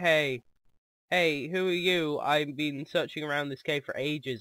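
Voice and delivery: ordinary talk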